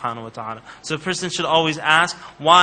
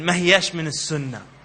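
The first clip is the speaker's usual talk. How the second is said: put-on Egyptian Arabic accent. Retelling how a man corrected someone after prayer: egyptian accent. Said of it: "he says in his Egyptian accent".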